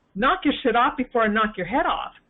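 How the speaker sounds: normal talking voice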